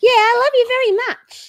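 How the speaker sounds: very high, loud, goofy silly dog voice. Streamer talks to their dog Poppy, who is licking them, in a silly dog voice. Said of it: "Makes me do my silly dog voice".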